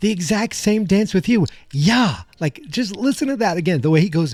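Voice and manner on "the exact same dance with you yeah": mock, very high, out-of-patience exasperated tone. Retelling a movie line where Doc runs out of patience: imitating Doc's exasperation. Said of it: "he's had enough with Marty asking".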